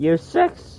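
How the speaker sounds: voice breaking and cracking mid-phrase. Listing how long each year took, the speaker's voice cracks. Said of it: "Voice crack".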